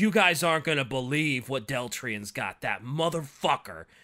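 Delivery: mock furious, angry ranting outburst. Retelling a book character catching someone fleeing: imitating a furious outburst. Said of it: "he's furious".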